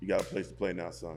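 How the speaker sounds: normal talking voice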